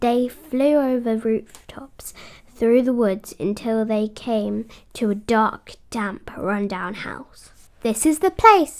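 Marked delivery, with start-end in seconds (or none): 7.8-8.8 excited, high-pitched, very loud exclamation. Icy brings the sleigh to a halt at the house, speaking excitedly. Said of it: "said Icy excitedly".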